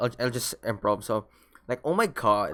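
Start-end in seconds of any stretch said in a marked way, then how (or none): 1.8-2.5 put-on American accent with rising then falling tune. Improvising a line to show an American accent: put-on American accent. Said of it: "I'm gonna put it in an American accent. ... So it goes up and it goes down".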